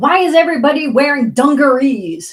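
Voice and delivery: loud, high-pitched burst. Recalling a man storming into an executive's office: retelling a loud remark. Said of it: "he says really loud".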